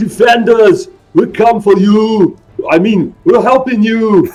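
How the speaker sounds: bellowed, roaring barbarian war cry. The barbarian calls out to the defenders as the fight begins, in a barbarian bellow. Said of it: "he bellows in his barbarian bellow".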